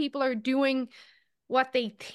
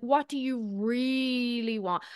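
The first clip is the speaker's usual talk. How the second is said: really drawn out slowly and stressed. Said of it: "I emphasize the word really".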